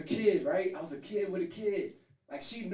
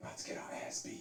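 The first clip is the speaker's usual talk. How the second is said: very soft, barely voiced whisper. Speaker points out they are whispering this line: whispered. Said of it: "Cause I'm whispering".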